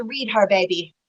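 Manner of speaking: plain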